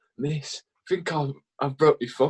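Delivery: play-acted teary, half crying, stunned disbelief. Recounting telling the teacher about an injured thumb, retelling half-crying disbelief. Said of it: "I'm like half crying, half in disbelief".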